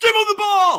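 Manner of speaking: screaming. Insisting the team must give a player the ball, screaming. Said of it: "Sorry, I'm screaming".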